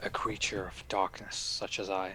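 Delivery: hushed whisper, under the breath. Whispering toward an owl in character: whispering. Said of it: "I'm gonna whisper again to the owl".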